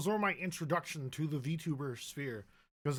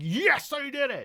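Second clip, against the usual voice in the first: very high, very loud, drawn-out scream; 11 semitones higher, 9 dB louder than usual. Retelling a late-night breakthrough over homework: imitating own past scream. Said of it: "I just started screaming".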